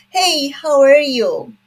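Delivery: American accent, slow. Explaining how accents differ by region, greeting like an American: American accent. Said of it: "American accent".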